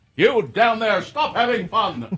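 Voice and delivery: booming high-pitched voice. After mocking a sermon, doing an impression of God. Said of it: "That's my impression of God".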